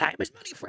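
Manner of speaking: very high-pitched little goblin voice. Quoting what a clicked goblin in Warcraft says: Warcraft goblin voice. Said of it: "You ever click on a goblin and he goes".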